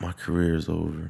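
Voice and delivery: very soft, quiet half-whispered aside. Imagining a man hugging his mom on camera, retell what he half-whispers to her. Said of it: "I guarantee he whispers to his mom".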